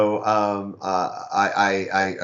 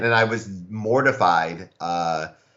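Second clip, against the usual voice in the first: ordinary talk, nothing marked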